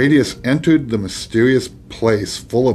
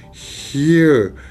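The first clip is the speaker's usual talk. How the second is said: hissed, higher pitch; 4 semitones higher than usual. The dragon answers Radius, who asks where his father is: hissed. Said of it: "hissed the dragon".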